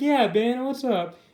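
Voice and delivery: put-on dripping sarcasm in a slow drawl. Retelling a comic scene where the girlfriend Carrie greets Ben: imitating Carrie's sarcastic tone. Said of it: "And it's very sarcastic".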